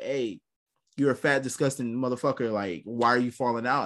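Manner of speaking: ordinary talk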